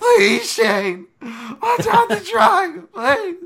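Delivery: very high, very loud, shrill crying scream, voice cracking. Acting out Mark Lehman at the Shane Roller fight, imitating Mark Lehman screaming, voice cracking, pleading. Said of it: "screaming his lungs out ... voice cracking, crying, pleading".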